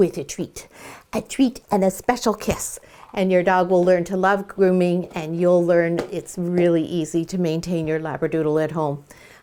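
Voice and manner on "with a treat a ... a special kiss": playful whisper, quieter. Ending a dog grooming tip, a speaker rewards the dog in a playful whisper. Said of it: "(playful whispers)".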